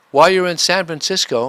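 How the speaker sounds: high, offhand, casual tone.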